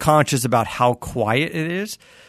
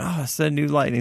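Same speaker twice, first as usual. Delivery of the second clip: hushed, half-whispered voice; 4 dB quieter than usual. Retelling what people behind the parked truck say: imitating people half-whispering. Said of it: "whispering about it".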